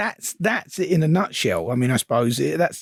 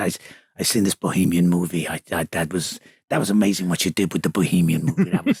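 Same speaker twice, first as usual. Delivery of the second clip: really deep voice, pitched way down low; 10 semitones lower than usual. Retelling a first talk with Al Ruddy: deep voice imitating Al Ruddy. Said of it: "he's got this really deep voice, and he's like this".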